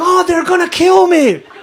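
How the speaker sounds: high, loud, panicked cry.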